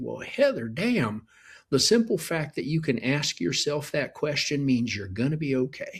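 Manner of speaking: imitated Texas accent. Imagining what Sam would tell Heather if he were here: Sam's Texas accent. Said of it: "he would say he had a Texas accent".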